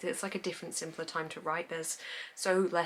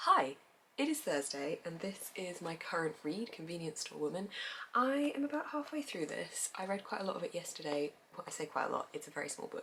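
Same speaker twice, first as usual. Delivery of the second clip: soft, hushed, quiet talk; 3 dB quieter than usual. Introducing a current read while everyone in the house sleeps, talking softly. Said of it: "I'm going to talk softly so I don't wake them up".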